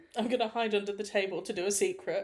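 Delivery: ordinary delivery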